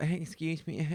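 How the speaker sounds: timid, meek little voice. Retelling asking kids to move at a machine: imitating own meek voice. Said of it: "meekly go".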